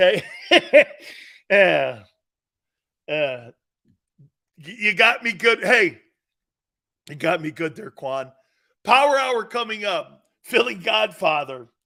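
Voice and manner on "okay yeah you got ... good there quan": laughing while talking, much louder. Talking to quan after he caught the speaker out, laughing while talking. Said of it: "I can't stop laughing".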